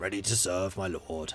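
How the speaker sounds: soft, gruff, grunty put-on knight voice. Trying out the other voices, imitating a grunty knight. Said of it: "can't quite get the gruntiness of the knight".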